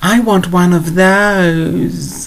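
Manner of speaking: high, slow, stretched-out whiny voice. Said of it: "This whiny voice where you stretch it out".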